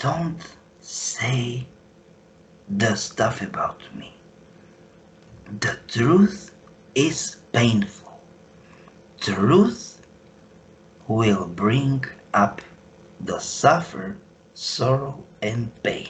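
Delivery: whispered close into the ear. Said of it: "and whisper to my, to my ear".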